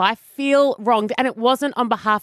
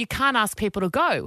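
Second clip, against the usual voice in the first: ordinary delivery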